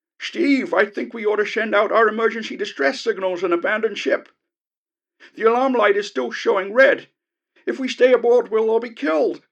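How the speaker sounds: panicked gabbling over intercom. Narrator reads the Professor calling Steve over the intercom, panicked gabbling over intercom. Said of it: "It was the Professor's voice, / It was the Professor again, calling from his navigation bay amidships. / It was the Professor's voice, calling urgently over the intercom. / gabbled the Professor over".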